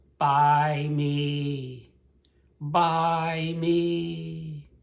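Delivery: very slow, high insect voice, "me" stretched. Voicing a 'buy me' plea, in a high voice like a trapped insect. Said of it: "you have to get that high tone in the voice, like an insect trapped in a web".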